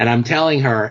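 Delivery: ordinary delivery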